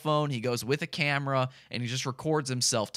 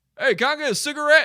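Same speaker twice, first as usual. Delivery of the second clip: very high, loud holler from a distance; 12 semitones higher, 7 dB louder than usual. Retelling a man hollering back from down the road: imitating a holler. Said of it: "he hollers back".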